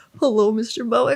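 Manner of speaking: mock, all-nerves, nervous voice. Retelling answering a call from a famous engineer: imitating own nervous voice. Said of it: "all nervous".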